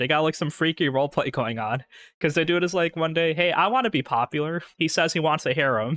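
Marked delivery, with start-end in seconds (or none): none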